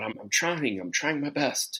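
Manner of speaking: whiny, complaining, protesting tone. Retelling a movie scene where Luke Skywalker complains: imitating Luke Skywalker whining. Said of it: "he's pretty much whining about it".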